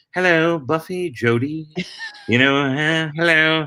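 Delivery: slow, stretched-out English accent. Speaker shows the word that would set him into Mister French; Mister French voice. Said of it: "the word that would set me into Mister French".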